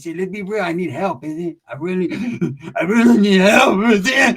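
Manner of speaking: weepy, slow, blubbering sobbing cry-talk. Retelling a man's reply after being asked to pay rent, imitating someone crying. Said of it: "when you cry, you sound like the junkyard dog".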